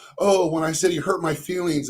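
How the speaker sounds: ordinary talk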